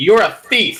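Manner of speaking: very loud, high-pitched, accusing voice. Playing a character accusing someone of theft in a silent brothel: very loud accusation. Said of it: "just very loudly".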